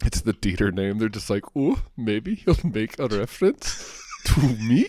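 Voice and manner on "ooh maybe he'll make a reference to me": put-on German accent, pitched up, very slow, drawn out. Speaker acts out imagined German listeners, imitating a German accent. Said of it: "I don't know if that's how Germans talk".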